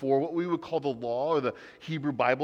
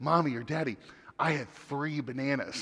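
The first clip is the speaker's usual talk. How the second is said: put-on conspiratorial, secretive whisper. Retelling a son's words at bedtime: imitating a conspiratorial whisper. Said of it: "whisper conspiratorially to us".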